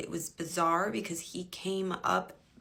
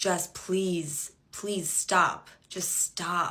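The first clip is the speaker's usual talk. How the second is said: put-on cold, detached, exasperated, slow and annoyed; 4 dB louder than usual. Retelling what he said while she was crying: imitating someone annoyed. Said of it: "annoyed that I was crying".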